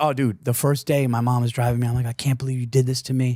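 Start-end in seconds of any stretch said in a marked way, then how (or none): 2.1-3.4 put-on tearful, crying voice. Retelling a drive to a new school with mom: imitating own past crying. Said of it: "I'm crying".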